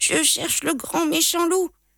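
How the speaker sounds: high, halting, faltering, stammering mumble. Narrating the little goat answering the big goat in the woods, stammering. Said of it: "Bredouille Petit Biquet".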